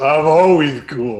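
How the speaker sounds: toothless undead voice through clattering jaws. Voicing a toothless undead answering a spell: undead voice through clattering jaws. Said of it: "through his clattering, toothless jaws".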